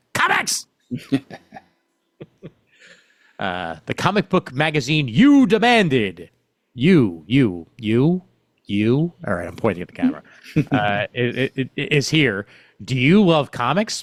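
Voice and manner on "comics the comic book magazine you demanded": swooping video game announcer voice. Announcing a new comics magazine to the camera: Sega voice. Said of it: "I should say in the Sega voice".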